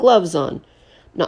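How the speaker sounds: plain reading voice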